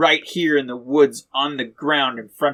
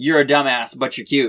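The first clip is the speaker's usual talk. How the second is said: ordinary talk, nothing marked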